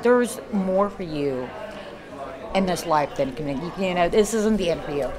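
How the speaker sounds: plain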